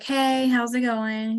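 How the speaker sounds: depressed, dejected, down-sounding voice. Showing how not to greet someone on a Zoom call: depressed-sounding greeting. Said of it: "like all depressed sounding".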